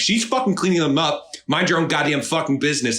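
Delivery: put-on, high, furious screaming. Telling a story about a parking lot confrontation, now screaming back at a stranger in fury, furious screaming. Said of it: "started like yelling at her".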